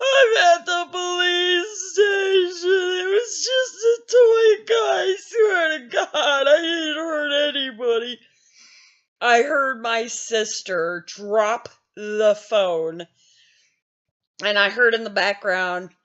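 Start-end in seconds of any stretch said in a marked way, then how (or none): 0.0-8.2 put-on very high, tearful, sobbing voice. Speaker reenacts calling their sister from the police station: retelling own crying. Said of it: "I started crying even more".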